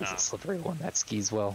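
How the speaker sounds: muttered quietly under breath. Voicing a character who comments on another: muttered under breath. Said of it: "he says under his breath".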